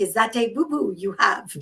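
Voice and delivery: put-on beautiful French accent. Retelling what a French counterpart asked in a meeting, in a French accent. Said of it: "with a very beautiful French accent was like".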